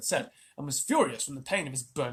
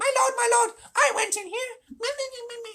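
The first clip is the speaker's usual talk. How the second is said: squeaky voice, very high and squeaking; 3 dB louder than usual. Reading a story aloud, voicing Tabaqui behind Shere Khan: squeaking Tabaqui voice. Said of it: "was squeaking".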